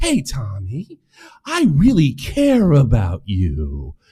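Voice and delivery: slow, swooping, very drawn-out mock sincerity. Retelling how the other speaker came at him, mocking imitation of phony sincerity. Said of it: "You come at me like a phony".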